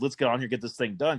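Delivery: ordinary delivery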